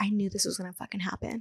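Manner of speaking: fast, annoyed, angry whisper. Retelling what she overheard a woman whisper to her sister: retelling a whisper. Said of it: "I heard her like whisper to her sister".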